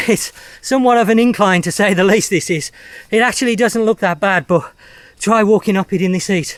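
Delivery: breathless panting. Walking up an incline in the heat, out of breath. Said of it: "I'm trying to c- catch my breath".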